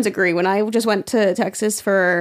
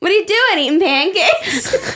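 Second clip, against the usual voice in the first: very high-pitched, familiar-sounding tone; 9 semitones higher than usual. Retelling how her sister always asks things, imitating her sister's tone. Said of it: "always the same tone of voice".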